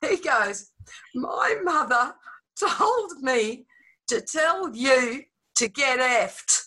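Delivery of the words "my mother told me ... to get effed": blunt, very loud outburst. Telling a story about a tough class, the speaker quotes a boy retelling a very loud line. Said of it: "In a very loud voice".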